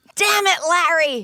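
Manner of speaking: put-on furious shouting. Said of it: "cursing him out like Larry David".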